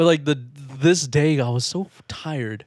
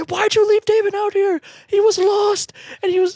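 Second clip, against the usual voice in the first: shrill, very high, scolding shout. Retelling how two drunk moms came in and scolded the kids: imitating moms yelling. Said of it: "they start yelling at us".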